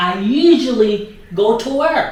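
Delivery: ordinary talk, nothing marked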